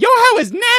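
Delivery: put-on very high, deliberately bad screaming voice. Retelling a woman screaming on the phone on a bus: imitating a woman screaming.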